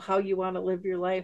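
normal talking voice

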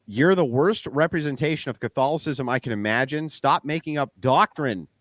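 ordinary delivery

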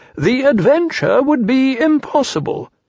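solemn, grave tone, very high pitch. Rabbit, sharpening his pencil, speaks to Piglet and Pooh, solemnly. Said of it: "said Rabbit solemnly".

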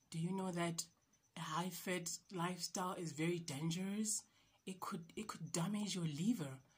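quiet, soft whispering. Retelling what a woman told her on her weight loss journey, imitating someone whispering. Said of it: "and she's whispering".

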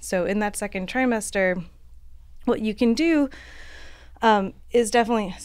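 short of breath, winded, out-of-breath talking. Pregnant speaker explaining exercise in the second trimester, out of breath. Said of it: "I'm out of breath".

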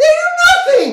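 overly squeaky, very high, loud voice. Make your point in a voice you then apologize for, an overly squeaky voice. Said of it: "Overly squeaky voice".

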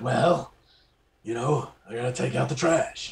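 hard-boiled police voice. Retelling what Harry says while describing him: Harry impression. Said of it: "that's actually a decent impersonation right there".

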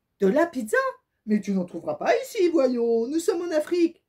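amused, loud, said through laughter. A passer-by answers a man searching for pizza: exclaiming while laughing. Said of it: "s'exclama en riant".

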